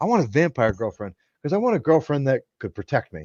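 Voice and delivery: completely sincere, dead serious, earnest tone. Retelling what was said to coworkers about a girlfriend: imitating own dead serious statement. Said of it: "I said this with all seriousness".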